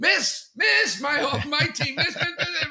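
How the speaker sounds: very high, loud, wild frantic cheering.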